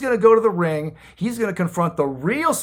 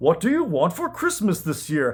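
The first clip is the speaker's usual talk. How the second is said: put-on foppish English accent. Retelling a wrestler playing Santa questioning another wrestler on his knee, foppish English Santa voice. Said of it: "weird, foppish English version of a Santa Claus voice".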